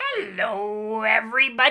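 loud, gravelly voice. Reading a line from a book when asked: Grover voice. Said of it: "say what Grover is saying in a Grover voice".

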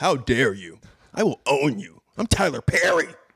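very slow, dramatic, drawn-out words with swinging pitch. Joking about an imagined movie, imitating Tyler Perry. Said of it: "he just becomes real".

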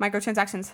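fast, rapid delivery. Answering a request to say the word fast: said fast. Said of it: "Can you say that word fast?".

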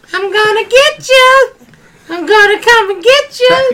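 very high-pitched toy-elf voice. Speaker imitates how the Elf on the Shelf talks: high Elf on the Shelf voice. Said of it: "elf on a shelf having that high voice".

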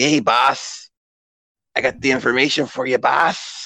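slow, sly, ratty henchman voice, drawled. Imagining what Meowth's human form sounds like: ratty human Meowth voice. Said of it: "he talks like".

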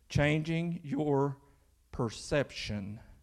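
very slow, drawn out, stretched word by word. Struggling to pronounce a word, the speaker says the phrase real slow. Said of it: "I'm going to say it real slow".

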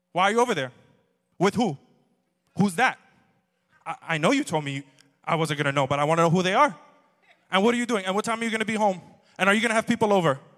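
loud interrogating tone. Imitating his mom questioning him on the phone, in her interrogating voice. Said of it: "It's interrogator".

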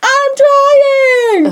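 put-on shrill, very high yell, "trying" drawn out. Retelling a story as the nightmare attacks, Nemo yelling. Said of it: "Nemo yells".

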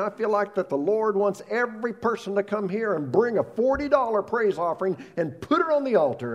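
put-on fired-up preacher scream. Retelling a pastor's appeal at the end of a sermon: imitating a pastor screaming. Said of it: "while he was screaming".

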